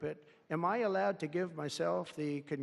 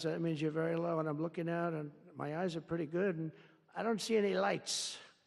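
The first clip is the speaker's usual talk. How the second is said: ordinary delivery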